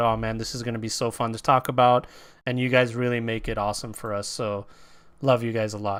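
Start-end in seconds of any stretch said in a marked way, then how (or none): none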